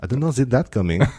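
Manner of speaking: put-on English spoken with a French accent. Retelling a Frenchman's reply on a flight, in a French accent. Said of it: "that's my French accent".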